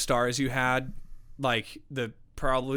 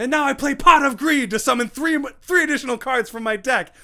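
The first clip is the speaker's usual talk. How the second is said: very high, very loud, shrill anime announcer voice; 12 semitones higher, 8 dB louder than usual. Retelling a guy in a VR chat video playing a card, in a Yu-Gi-Oh anime voice. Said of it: "he's like announcing it in like a Yu-Gi-Oh anime voice".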